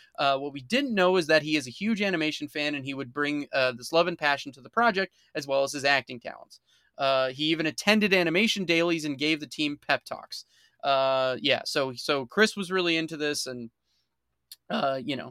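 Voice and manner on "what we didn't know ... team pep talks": ordinary talk, nothing marked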